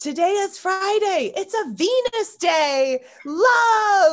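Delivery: put-on shrill, very high, loud child scream, "love" stretched. A parent retells their son shouting to another kid through the car window, imitating a child screaming. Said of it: "he's screaming".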